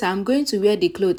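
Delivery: plain reading voice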